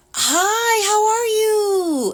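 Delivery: very high, put-on happy, forced cheery voice. Describing how people greet the speaker when they call; imitating a practiced happy voice. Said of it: "practice their happy voice".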